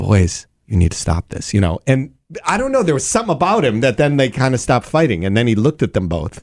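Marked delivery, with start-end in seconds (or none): 0.0-1.5 mock-calm voice, pitched much lower. Retelling what a man said to boys fighting in the hall, imitating a calm voice. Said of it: "very calmly walked over and said".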